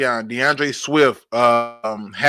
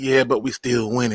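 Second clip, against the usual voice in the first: real smooth, easy, calm, laid-back delivery; 3 semitones lower, 4 dB quieter than usual. Recalling a podcast regular coming in calm while others were hyped; imitating Jalen's smooth voice. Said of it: "Jalen would come in with a real smooth voice".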